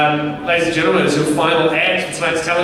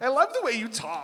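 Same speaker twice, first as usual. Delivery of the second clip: put-on American girl's accent, pitched up; 6 semitones higher, 11 dB quieter than usual. Showing the American audience what they sound like: imitating an American accent. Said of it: "this is what you sound like".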